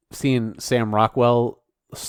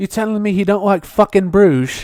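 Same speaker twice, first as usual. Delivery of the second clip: put-on British accent, very high and loud; 9 semitones higher, 5 dB louder than usual. Joking about an R-rated film, the speaker swears in: British accent impression. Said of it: "your impression is".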